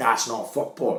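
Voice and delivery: play-acted, heated, angry screaming voice. Retelling how you flipped on the line at a kids' football match, imitating your own angry scream. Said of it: "I'm screaming at these 2 fucking 7-year-olds".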